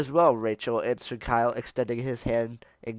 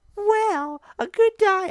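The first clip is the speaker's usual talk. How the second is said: straining put-on character voice, higher; 4 dB louder than usual. Reading a story aloud, voicing Rachel's answer about diet: Rachel voice. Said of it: "if I do that voice".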